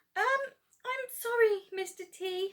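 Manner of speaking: very high little squeak. Narrator reads her reply to mister t, in a small squeak. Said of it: "she squeaked".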